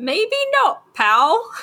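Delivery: very high, swooping put-on Cockney accent. Voicing a talking hand that answers the stranded man: Cockney accent. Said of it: "doing a Cockneyed accent".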